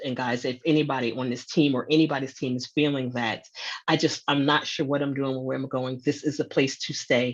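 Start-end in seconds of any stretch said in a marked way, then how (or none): none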